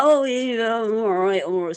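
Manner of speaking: put-on strong Devon accent. Acting out a man by the road answering an offer of a lift, in a broad Devonshire accent. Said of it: "in this broad Devonshire accent".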